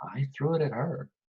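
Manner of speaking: conspiratorial confiding tone. Leaning in to confide in a gossiping innkeeper in character: conspiratorial tone. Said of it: "conspiratorially, and I said".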